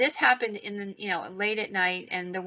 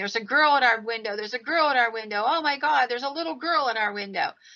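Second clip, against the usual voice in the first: imitated scream of boys, pitched higher; 4 semitones higher than usual. Retelling how the teenage boys came out of their section: imitating boys screaming. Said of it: "teenage boys screaming".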